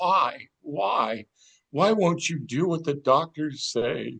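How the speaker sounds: acted-out crying, tearful, repeated pleading. Retelling how their mom sat on the couch crying, imitating someone crying. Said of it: "sat on the couch crying and repeating".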